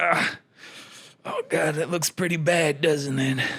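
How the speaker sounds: put-on dying voice. Acting out last moments after being shot: put-on dying character voice. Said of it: "gonna do a character while I die".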